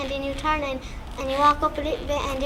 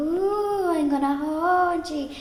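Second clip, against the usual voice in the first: slow, drawn-out, eerie horror-film ghost voice; 2 semitones higher than usual. Describing how a ghostly she might threaten children, in a spooky horror-movie voice. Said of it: "She might sound like a horror movie".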